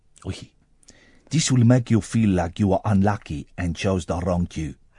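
attempted, half-guessed put-on Greek accent. Reading out a researcher's quote from a news story: attempted Greek accent. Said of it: "Trying to think of a Greek accent".

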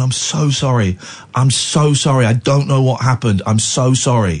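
put-on, tearful crying voice. Retelling apologizing when a policeman knocks on the window: imitating own crying. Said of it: "I just start crying even more".

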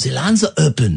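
attempted gentle German accent, put-on. Trying the line again after a request for a gentle version, attempted gentle german accent. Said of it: "what about a nice gentle German?".

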